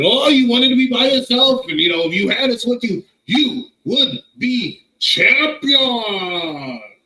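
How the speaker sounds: acted, slow, aggressive, high and loud, champion drawn out. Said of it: "She talks with such aggression".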